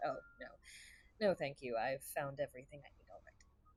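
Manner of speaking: dismissive scoffing, muttered under breath. Voicing a character turning down an offer of help: scoffing under breath. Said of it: "scoff under my breath and just shake my head and say".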